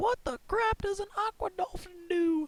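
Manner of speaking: high, slow, squeaky baffled voice. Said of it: "they're gonna be like".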